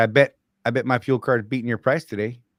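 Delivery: mock nasty, needling, goading, taunting tone. Retelling a challenge to a driver at the pump: imitating own nasty taunt. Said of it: "So I'm gonna say it nasty".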